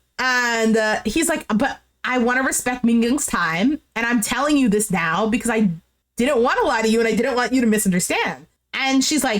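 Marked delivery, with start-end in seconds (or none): none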